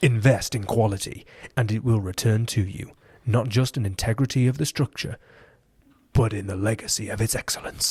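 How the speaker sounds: put-on formal announcer voice. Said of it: "should I read them in my presentation voice?".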